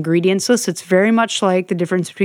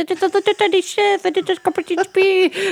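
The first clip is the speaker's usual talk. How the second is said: put-on tiny puppet voice, much higher, slower; 12 semitones higher than usual. Describing a tiny chef character to listeners, in a Tiny Chef voice. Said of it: "it talks like this".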